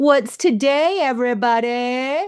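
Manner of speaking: put-on, impossibly loud, booming, high-pitched yell. Clothing store manager rallying the Sunday crew, retelling a booming yell. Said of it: "I would yell impossibly loudly".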